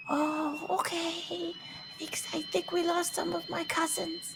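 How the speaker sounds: tiny faraway creature voice, very high. Player voicing small creatures calling to the party from a distance, small distant voice. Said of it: "little voice off in the distance".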